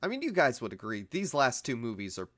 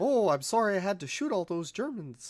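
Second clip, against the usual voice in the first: put-on very high-pitched old-timey Canadian accent; 10 semitones higher, 4 dB louder than usual. Joking about how Canadians talk, a speaker tries an old-timey Canadian accent. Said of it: "I'm curious what old timey Canadian accent sounds like".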